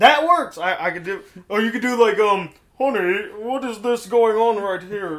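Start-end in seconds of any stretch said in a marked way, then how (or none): 2.8-5.2 posh, moneyed, upper-class man's voice.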